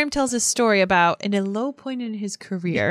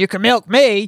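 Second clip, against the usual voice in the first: put-on loud talking cow voice with a Texas accent; 5 dB louder than usual. Acting out pretending to be a cow from texas: texan cow voice. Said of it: "somehow it's a Texan cow".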